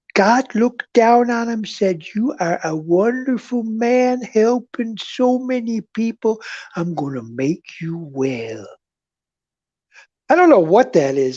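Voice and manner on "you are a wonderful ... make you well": strange fake hillbilly voice. Retelling what God said to a sick man who was cured, in a put-on voice. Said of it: "is that a hillbilly or what voice".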